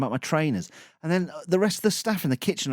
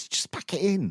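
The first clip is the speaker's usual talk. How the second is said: ordinary talk, nothing marked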